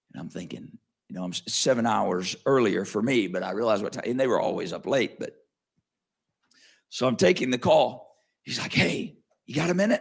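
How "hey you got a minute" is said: higher-pitched whisper. Retelling a late-night video call from a friend, imitating someone whispering. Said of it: "he's whispering".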